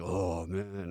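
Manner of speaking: beaten, crestfallen, deflated voice. Retelling the director's reaction after being told off: imitating Joel Schumacher sounding defeated.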